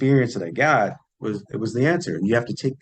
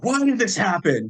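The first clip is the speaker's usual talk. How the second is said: mock angry scream, very high and shrill; 10 semitones higher than usual. Retelling a vision and asking a floating figure why: retelling own scream. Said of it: "telepathically screaming at him".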